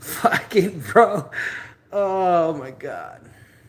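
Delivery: talking through laughter. Retelling a bad day, laughing while talking. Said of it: "I'm laughing".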